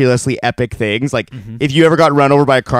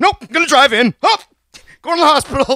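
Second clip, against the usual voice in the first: put-on very high, full-blown panicked voice. Retelling how his dad turned down a ride to the hospital, imitating dad's panic. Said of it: "going into full panic shock".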